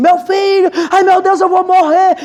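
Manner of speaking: mock high-pitched screaming mother voice. Retelling a mother calling her children during the bee attack: imitating a mother screaming. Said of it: "mãe gritando, chamando os filhos".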